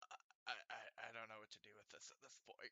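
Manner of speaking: very quiet, halting, uncertain stammering. Voicing a character looking at corpses, unsure: stammering in-character uncertainty. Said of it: "kinda scratches his bald head and is like".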